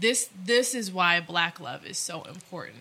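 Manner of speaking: ordinary talk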